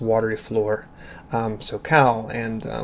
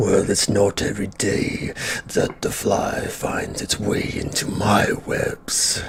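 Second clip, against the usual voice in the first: slow creature voice; 2 semitones lower than usual. Voicing a many-eyed creature speaking from a passage above: voice of a many-eyed monster. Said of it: "And you hear a voice".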